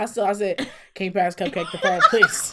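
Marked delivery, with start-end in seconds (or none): 0.9-2.5 put-on nice, steady, calm, even, polite tone. Retelling asking to have the phone passed back: retelling own calm even tone. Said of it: "real nice, real even tone, real calm".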